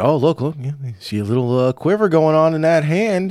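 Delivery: put-on heavy country accent. Retelling a sports commentator's remark that they mocked, in a heavy country accent. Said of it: "the guy with the very heavy country accent".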